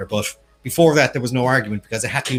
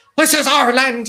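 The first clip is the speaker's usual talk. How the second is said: very high, loud, belted put-on Irish brogue; 13 semitones higher, 6 dB louder than usual. Talking about a great film, you quote its actor in Tom Cruise's Irish accent. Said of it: "with his Irish accent".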